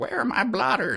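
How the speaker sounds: put-on very high old-timer prospector voice. Joking about a story clue in an old prospector voice. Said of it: "like an old prospector".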